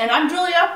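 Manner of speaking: very high, loud, through a mouthful of food. Giving own name while signing off, talking with mouth full. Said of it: "With a mouthful of food".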